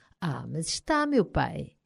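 sly, mischievous, teasing tone. Young Simon answers his grumbling father, slyly. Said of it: "disse o jovem Simon com malícia".

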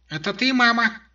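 piping little squeak, very high and thin. A narrator reading a voice answering a knock behind a door, thin and squeaky. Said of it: "раздался тонкий писклявый голосок".

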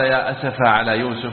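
ordinary talk, nothing marked

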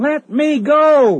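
very high, shrill, loud screamed cry. The narrator, being taught to swim by Sven, wants no part of it, screaming. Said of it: "I screamed".

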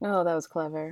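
dry sarcasm. Talking about a film, reacting to one of its jokes, sarcastic. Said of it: "It sounded sarcastic".

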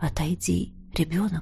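affectionate, tender, hushed, very soft whisper. Reading the personified night addressing a child, tender whisper. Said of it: "ласково шепнула ночь".

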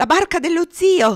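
shrill, piercing, very loud, high-pitched yell. Narrator reads the girl signalling wildly above the din: shouting. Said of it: "Gridò".

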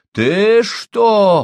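very high, loud outcry. A Jesuit missionary, grabbed by the chest by an angry man, shouts back; shouted. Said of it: "крикнул иезуит".

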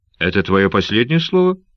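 plain

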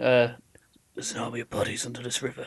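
rough gravelly voice. Recalling the narration at the film's opening, gravelly voice. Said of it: "That was Danny's gravelly voice".

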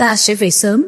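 plain

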